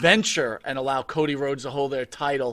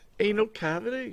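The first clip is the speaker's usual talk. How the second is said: put-on British accent, much higher; 7 semitones higher, 3 dB quieter than usual. Someone coaxing another person to talk british, in a joking british accent. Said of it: "Can you say anal cavity in, in British?".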